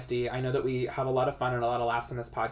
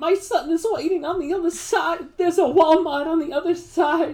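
belted out, high-pitched and loud; 8 dB louder than usual. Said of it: "can do the [name], [name] impression".

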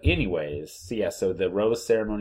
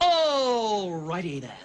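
squeaky, very high comic character voice, pitched way up; 12 semitones higher than usual. Imitating a contestant's Ace Ventura impression: Ace Ventura impression. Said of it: "he does a Ace Ventura".

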